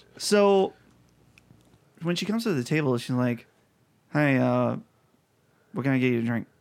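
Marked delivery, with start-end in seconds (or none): 4.2-6.5 mock short mumbled mutter under breath, much slower. Telling a story about a woman at your table, imitating her short, mumbly mutter. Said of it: "kind of mumbly".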